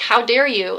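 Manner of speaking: furious, angry delivery. Retelling a reply to a doctor, imitating a furious retort. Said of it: "looking at him just furious".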